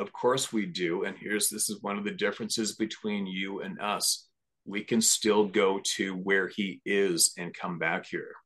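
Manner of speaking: slow, deliberate, each word landing.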